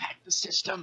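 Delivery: very high-pitched, secretive whisper. Voicing a character going up to another: whispering in character. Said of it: "Ari goes up to Smalls and whispers".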